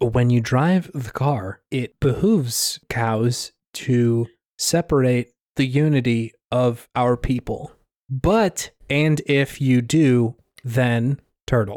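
very slow, word-by-word, garbled delivery. Reading out a review translated through Google Translate: Google Translate impersonation. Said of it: "Did you just do an impersonation of Google Translate?".

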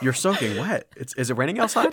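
teasing, sarcastic voice. Quoting a favorite movie line the way the actor said it: imitating sarcastic delivery. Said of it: "being sarcastic".

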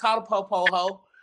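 mild, light yell with a taunting tone. Retelling what a friend shouted back: imitating someone yelling. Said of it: "Ricky yells".

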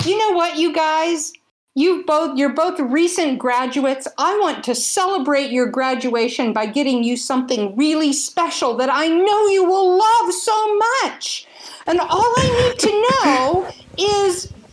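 mock, very high-pitched, over-thrilled gushing excitement. Acting out a mother or mother-in-law calling the couple, imitating an excited mother. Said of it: "calling with so much excitement in her voice".

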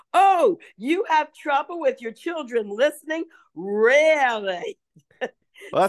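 mock amused laughing disbelief. Retelling a reaction to other parents' listening troubles, retelling laughing disbelief. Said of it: "I crack up later and go".

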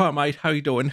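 put-on over-the-top English accent. Retelling how a man greets someone in English: imitating a crazy English accent. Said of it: "mit dem craziesten englischen Akzent".

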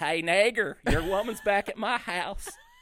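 booming, loud, high put-on hillbilly-accent holler. Retelling yelling out really loud in San Francisco, in a hillbilly accent. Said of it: "I yelled out really loud in my hillbilly voice".

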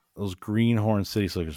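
normal talking voice

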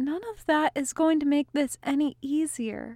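soft, quiet, gentle voice. Answering a man's offer of drinks and music, said softly. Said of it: "Merrill said softly".

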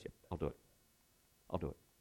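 very quiet, soft, hushed, almost whispered. Acting out a helper agreeing to help everyone: imitating a quiet yes. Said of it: "very quietly".

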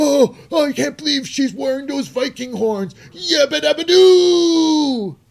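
play-acted, very high, loud, thrilled commentator shriek. Act out Michael Cole reacting to Valhalla at a match, as a mock-excited Michael Cole. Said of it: "So excited over that".

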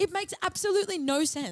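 agitated, worked-up rant pitched very high. Complaining to another speaker about a football guernsey's colours, worked up. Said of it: "calm down. Take a breath".

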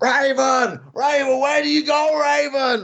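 very high, stretched-out, drawn-out calling shout. Recounting a mate running around a hotel calling another: retelling someone shouting Raven. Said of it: "just shouting Raven".

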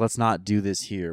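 ordinary delivery

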